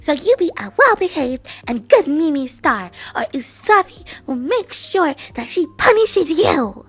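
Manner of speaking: very loud, stern scolding tone. Warning a mimi star to behave or be punished, in a scolding voice. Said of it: "Usaphi will put on her scolding voice".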